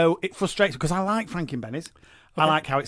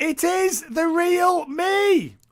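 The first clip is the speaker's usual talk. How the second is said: mock shrill scream, very high and very slow; 12 semitones higher than usual. Introducing the next story, imitating someone screaming. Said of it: "It's somebody screaming".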